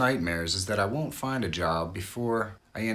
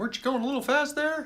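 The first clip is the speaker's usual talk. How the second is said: squeaked out quickly and high. Retelling being pulled over by the cops, Mickey Mouse voice. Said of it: "talking like Mickey Mouse saying".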